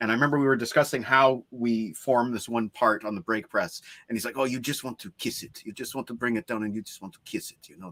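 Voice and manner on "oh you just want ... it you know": very quiet, murmured put-on French accent. Speaker retells what a brake-press worker said, imitating his French accent. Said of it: "had a great French French accent as well".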